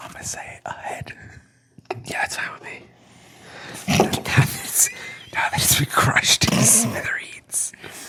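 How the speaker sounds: soft, unvoiced ASMR whisper.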